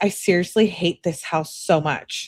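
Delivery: normal talking voice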